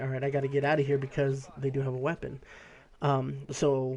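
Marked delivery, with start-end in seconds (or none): none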